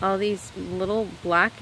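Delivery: ordinary talk, nothing marked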